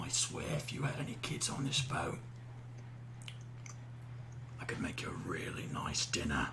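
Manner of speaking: soft, low menacing whisper. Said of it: "I whisper in his ear".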